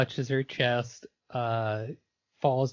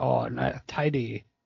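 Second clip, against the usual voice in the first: put-on fairy voice, roughly Scottish accent. Quoting a game character's odd catchphrase: Mister Drippy voice. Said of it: "He'll say things like".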